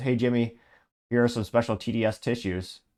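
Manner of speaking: normal talking voice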